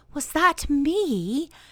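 awed and high, me drawn out. A narrator reads a character's question, in an awed voice. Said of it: "in an awed voice".

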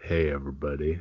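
low, soft bourbon voice like a whiskey ad. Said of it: "Use your bourbon voice".

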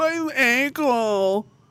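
acted-out, very high-pitched, whiny complaining tone. Retelling a soldier on a night patrol; imitating a whine. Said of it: "he's like whining like".

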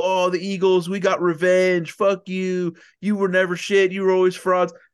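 smug, crowing, gloating, taunting tone. Describing what he won't do on the pod, acting out mock gloating. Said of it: "dunking on people".

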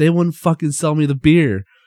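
very loud, pissed-off, angry griping. Retelling what a man said after being refused beer: acting out angry complaint. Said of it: "he's all pissed off".

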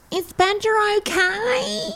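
screaming. A character calls down to someone below, screaming. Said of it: "Sheila screams out and says".

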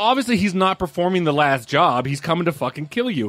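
ordinary talk, nothing marked

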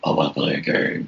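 eerie, creepy, rough horror-villain rasp. Speaker comparing a horror villain's voice across the films, creepy Saw movie voice. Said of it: "Creepy like that".

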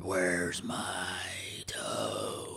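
whispered, slightly demonic voice. Correcting how a voice in a story sounded: imitating a slightly demonic voice. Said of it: "it was a little demonic".

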